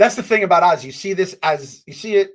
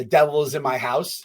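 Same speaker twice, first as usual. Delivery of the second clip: plain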